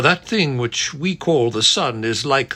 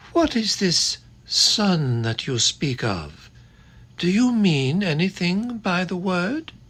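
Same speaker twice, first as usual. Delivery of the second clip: gentle, soft, high coo like a wood pigeon; 5 semitones higher than usual. Narrator reading the witch's question in a story, in a soft cooing voice. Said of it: "cooing softly like the voice of a wood pigeon".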